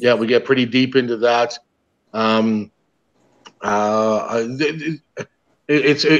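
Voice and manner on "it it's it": very slow, halting stammer with stumbling false starts. Guest struggling to sum up a deep talk from the night before: stammering. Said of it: "I'm kind of stammering".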